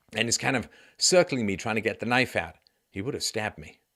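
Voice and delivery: ordinary talk, nothing marked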